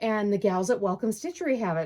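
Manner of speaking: ordinary talk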